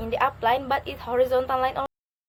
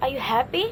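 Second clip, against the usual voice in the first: rising pitch on the word happy. Teaching intonation of questions without question words, rising pitch at the end. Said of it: "the last is rising your tone".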